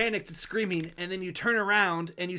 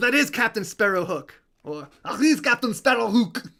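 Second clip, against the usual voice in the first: loud, thick, heavy put-on French accent; 3 semitones higher, 6 dB louder than usual. Voicing armored cats naming a captain: heavy French accent. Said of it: "their heavy cat French accents".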